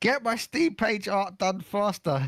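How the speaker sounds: high, slow, harsh slave-driver voice. Joking that a friend with a whip keeps the speaker locked in a basement: imitating Nep as a whip-cracking slave driver. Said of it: "and he's like".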